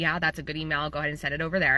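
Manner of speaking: ordinary talk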